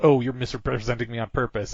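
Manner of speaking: normal talking voice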